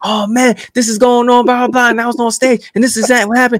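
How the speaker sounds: acted-out, gushing, eager, excited babble. Telling about courting his wife, the speaker acts out his past excited yelling. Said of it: "why are you yelling?".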